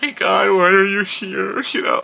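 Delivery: loud, high, put-on blubbering crying. Imagining themselves crying out of the speakers at work, mock crying. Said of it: "You don't want me crying out of the speaker".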